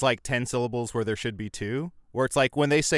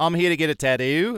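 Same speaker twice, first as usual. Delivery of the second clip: put-on raised, high Australian accent, tattoo said tad-do; 5 semitones higher, 5 dB louder than usual. Speaker mimics people on a tattoo show, imitating Australian accent. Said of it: "they say Tad-do".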